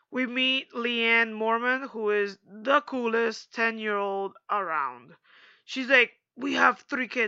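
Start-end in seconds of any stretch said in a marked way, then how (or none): 6.3-7.2 put-on raspy, creaky, tough girl voice. Recapping the episode, quoting the ten-year-old Lyanna Mormont in a raspy voice. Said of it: "I don't know why I gave her such a raspy voice".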